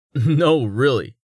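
with a laugh. A man answers a skeptical woman's doubt, with a laugh. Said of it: "Rain replied with a laugh".

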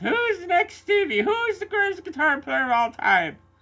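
put-on very high Irish accent. Talking about guitarists, the speaker slips into an irish accent. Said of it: "I just segged into an Irish accent there".

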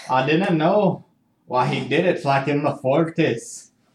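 put-on Scottish accent. Telling a story, rolling with an unplanned voice: scottish accent. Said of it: "Now you're Scottish".

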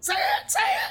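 very high, long, stretched-out screaming. Recalling a scene where someone screams at another: Sam Kinison scream. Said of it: "in his trademark voice".

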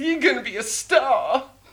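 very high, drawn-out showbiz cheer. Cheering on a guest who just joined TikTok: John Travolta voice. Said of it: "I'm sorry for John Travolta-ing you".

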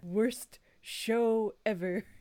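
cartoon super-nerd comic-shop clerk voice. Putting on a super nerd hat before a rant: Comic Book Guy voice. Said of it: "comic book guy from The Simpsons".

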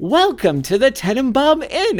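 very high, bright, chipper, sing-song voice. Retelling a movie scene where a lady greets visitors at the door: imitating a chipper greeter. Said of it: "this very chipper person saying".

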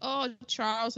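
normal talking voice

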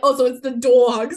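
put-on Jersey accent. Speaker quoting a girl from Jersey in conversation, New Jersey accent. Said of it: "they're like from Jersey".

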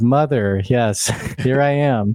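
acted flat, totally expressionless deadpan delivery. Retelling a game scene where a halfling pretends to be the missing girl, retelling an expressionless line. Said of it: "in this totally expressionless".

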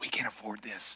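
very quiet, hushed whisper, barely voiced. Retelling a story about menus, speaker quotes their beloved leaning over: whispering. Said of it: "kind of in a whisper".

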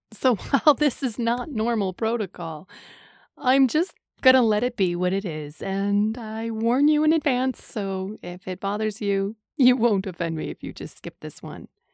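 tearful, weeping, crying through the words. Podcast host warning listeners before a book review, while crying. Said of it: "I'm crying again just trying to get through the review".

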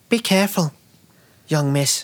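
put-on high young peasant boy voice. Voicing a seventeen-year-old peasant boy saying goodbye: peasant boy voice. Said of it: "the voice kinda ruined that one for me".

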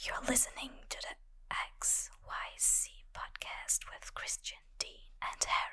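very soft, breathy ASMR-style whisper. Performing a podcast intro on request: asmr voice. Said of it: "in, like, the A S M R way".

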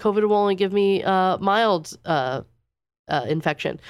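plain

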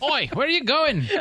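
very high, fake, put-on Irish accent. Joking about driving in the other lane, the speaker does an irish accent. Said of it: "That was Irish".

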